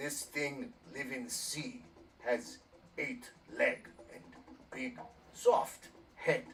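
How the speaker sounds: broken caveman-style speech with Neanderthal-style accent. Showing an example clue for the word octopus: Neanderthal accent. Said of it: "Make sure you do the Neanderthal accent".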